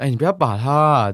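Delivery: casual, offhand, joking tone, not threatening. Retelling a man's warning again: imitating a joking, casual tone. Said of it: "有点像讲干话的口气的".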